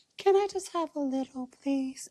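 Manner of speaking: put-on very high, babyish, childlike little-kid voice. Retelling how she asked for wine at dinner: imitating a childlike voice. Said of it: "what the fuck voice is that?".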